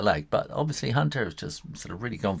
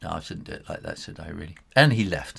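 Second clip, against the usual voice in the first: normal talking voice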